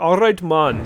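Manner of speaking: put-on, roughly approximated Jamaican-sounding accent. Imitating a game character's odd accent: imitating a Jamaican-sounding accent. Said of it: "I assume Jamaican, 'cause he's like".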